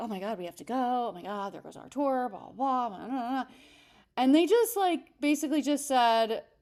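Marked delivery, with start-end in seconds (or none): 0.0-3.4 mock fed-up, exasperated, frustrated grumbling rant. Retelling a couple growing impatient while a clerk searched for shoes, imitating a frustrated couple. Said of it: "I could hear the frustration in this couple's like voice".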